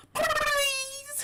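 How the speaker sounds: very high-pitched cartoon rabbit voice. Showing a cartoon voice with headphones off: Roger Rabbit voice. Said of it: "that is Who Framed Roger Rabbit".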